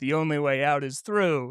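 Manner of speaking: ordinary talk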